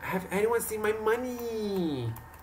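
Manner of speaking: really whiny, very high voice, money drawn out. Speaker imitates how a woman she knows says money: imitating a whiny voice. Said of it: "Like a really whiny voice".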